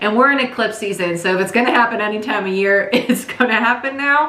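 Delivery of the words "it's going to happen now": higher-pitched, laughing delivery. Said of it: "I'm sorry I'm laughing".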